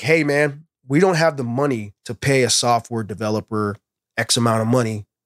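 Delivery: ordinary talk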